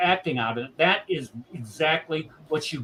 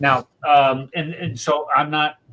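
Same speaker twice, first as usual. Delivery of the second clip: ordinary talk, nothing marked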